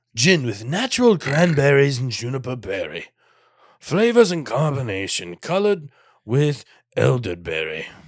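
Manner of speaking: sing-song, olde-worlde put-on medieval proclaiming voice. Reading the drink label aloud to the other speaker, in a put-on medieval voice. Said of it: "That was a good medieval voice".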